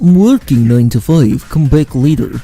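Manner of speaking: put-on Russian accent. Practicing the Russian accent, trying the line again, Russian accent. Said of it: "practice the Russian accent".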